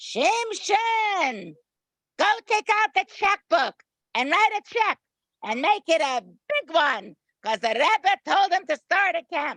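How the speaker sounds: very high, ringing yell carrying a long way. Speaker retells a woman's instant answer to a request for money, retelling a yell. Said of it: "she yelled with and her uh, with her beautiful voice".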